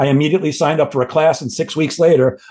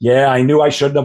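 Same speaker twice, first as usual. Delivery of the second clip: usual speaking voice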